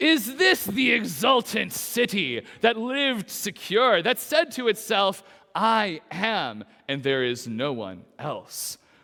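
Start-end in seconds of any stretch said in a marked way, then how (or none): 0.0-5.2 dripping with heavy sarcasm. Reading a chapter and verse aloud, read with more sarcasm. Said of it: "I need to read that with more sarcasm".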